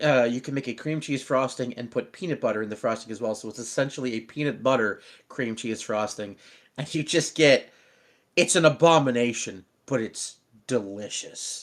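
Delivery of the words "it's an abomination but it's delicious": evil-sounding, much slower. Talking with another person, sounding evil. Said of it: "You sounded so evil when you said that".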